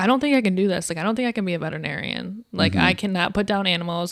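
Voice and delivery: ordinary talk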